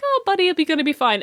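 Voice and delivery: put-on very nice, friendly tone. Retelling how Char delivers a line in the dub: imitating Char saying it pleasantly. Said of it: "he says it really fucking nicely".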